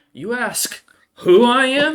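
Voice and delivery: put-on very high, slow, drawn-out drunken troll snarl. Voicing a drunk half troll leaning into a player's face: drunken half troll snarling in face. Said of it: "he gets into your eye level and goes".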